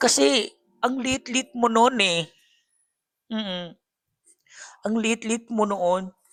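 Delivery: tearful voice on the verge of crying. A supporter from Mindanao addressing Dave directly, tearful. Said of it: "naiiyak ako".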